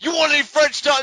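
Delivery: very loud, high-pitched, furious put-on yell. Joking that the wrestler offers bread: Mark Henry angry voice. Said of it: "Mark Henry's angry voice".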